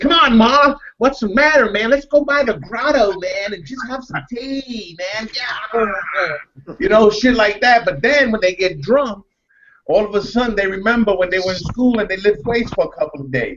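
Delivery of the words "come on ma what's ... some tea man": put-on childlike voice. Describing young bucks who went to Princeton, imitating how Princeton kids talk. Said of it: "they talk like this".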